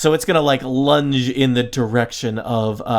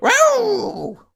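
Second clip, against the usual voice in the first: gnoll howl voice, higher pitch. Voicing a gnoll that howls at a player: gnoll voice. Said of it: "That's my gnoll voice".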